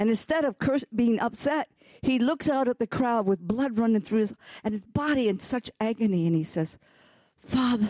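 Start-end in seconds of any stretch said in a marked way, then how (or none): 7.4-7.9 acted compassionate voice, calm not yelling, pitched higher. Retelling Jesus forgiving the crowd: voicing Jesus with love and compassion. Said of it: "love and compassion, not yelling".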